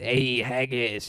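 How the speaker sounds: put-on Mexican accent, tried out. Explaining how to guess where words come from by trying accents; Mexican accent. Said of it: "You do like a like a Mexican".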